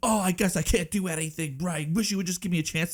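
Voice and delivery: put-on curt snapping. Describing someone who keeps snapping at his parents, imitating someone snapping. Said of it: "he keeps snapping at his parents".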